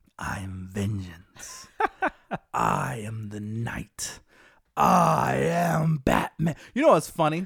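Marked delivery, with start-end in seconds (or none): 0.2-6.6 very low, very slow vigilante voice, every word dragged. After the other speaker mentions a Batman voice, doing the Batman voice. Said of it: "Say your vengeance".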